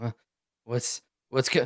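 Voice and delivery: drowsy, groggy, only half awake voice. Voicing a prisoner waking up in handcuffs: groggy, just waking up.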